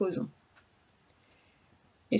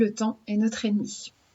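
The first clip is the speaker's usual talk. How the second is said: usual speaking voice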